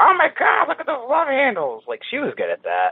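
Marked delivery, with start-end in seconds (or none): 0.0-1.8 very high, loud, cross, angry grandma voice. Speaker recalls what their grandma said whenever they gained weight; imitating angry grandma. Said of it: "Angry grandma voice".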